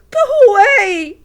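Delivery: very high, very loud, quavering, trembling pleading voice. Narrating a school scene, the reader voices Joel pleading, quavering plea. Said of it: "pleads in a quavering voice".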